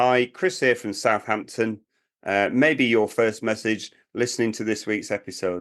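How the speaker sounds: ordinary talk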